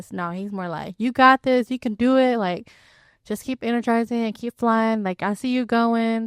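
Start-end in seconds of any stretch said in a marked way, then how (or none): 1.0-5.6 put-on encouraging tone, higher. Retelling how the coach pushes runners on: imitating the coach's encouraging tone. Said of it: "he doesn't say it in a tone where".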